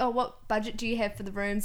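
plain

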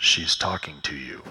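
low-pitched, loud voice. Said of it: "this little voice in my head goes".

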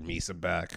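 put-on deep, soft, grizzled old-man voice. Describing how an older version of a character would talk, deep grizzled voice. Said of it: "but it's deep".

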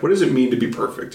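ordinary talk

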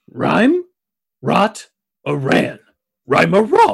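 barked out, with r sounds pushed forward. In a stage play, the dog struggles to answer another character: Scooby-Doo voice. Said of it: "Scooby is a real dog that struggles to be understood. Scooby on stage will be a puppet. ... Ruh-huh! Rhyme rared!".

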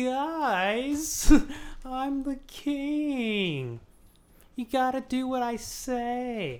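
high, whiny, slow, stretched-out drawl. Retelling a scene between Tyrion and Joffrey, in a mock-whiny Joffrey voice. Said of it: "let me be more whiny".

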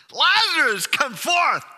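very loud, high, commanding shout. Explaining a Bible passage about Lazarus, retelling a shout. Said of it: "He shouts it".

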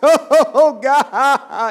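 drawn-out, booming, high, sob-like wailing prayer voice. Imitating a grandmother who prays aloud: loud, crying-sounding prayer voice. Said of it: "prays in that loud voice that sounds like she's crying".

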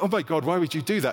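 normal talking voice

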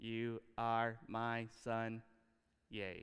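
flat, lifeless robot monotone, low and slow. Showing god's words said without passion, flat, mechanical robot voice. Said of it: "do you really think God said this like a robot?".

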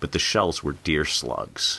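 plain

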